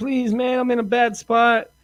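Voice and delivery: put-on crying, high, tearful and pleading. Retelling a message a woman left him, imitating someone crying. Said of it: "she leaves a message crying".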